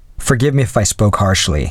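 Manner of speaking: plain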